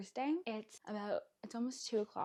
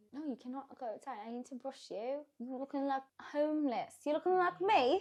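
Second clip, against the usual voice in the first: loud put-on British accent, fussing tone; 4 semitones higher, 5 dB louder than usual. A speaker addresses a boy, talking in a british accent. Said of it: "I need to stop talking in a British accent".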